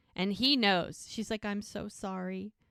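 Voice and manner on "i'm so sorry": mock crying through the words, sobbing and tearful. Retelling a sad scene from a show: imitating sobbing. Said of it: "She's sobbing".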